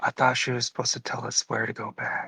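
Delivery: hushed whisper. Whispering an in-character line to Val during the game: whispering. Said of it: "I whisper, I try to whisper to Val".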